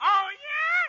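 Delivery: put-on childlike voice, high and loud. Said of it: "I'm gonna play both parts".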